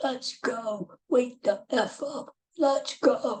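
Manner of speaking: very slow, high, drawn-out bellowing hype yell. Retelling a man leaving the men's room clapping: imitating a man yelling. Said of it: "he's yelling at the top of his lungs".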